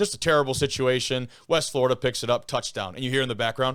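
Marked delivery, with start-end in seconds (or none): none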